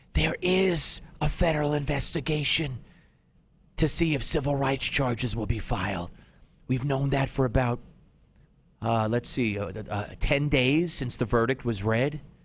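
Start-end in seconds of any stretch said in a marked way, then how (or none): 0.2-6.1 mock, pretend whisper. Giving a sarcastic hint to the clueless City Council: mock whisper. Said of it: "I'll whisper this".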